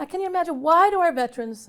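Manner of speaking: emotional, choked-up voice, high and loud. Talking about a veteran who ended his life, the speaker gets emotional. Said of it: "I get emotional".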